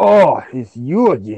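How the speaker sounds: deep warlock character voice. In a fantasy game, voicing the warlock as he sees the players: warlock character voice. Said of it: "He's saying it in that voice".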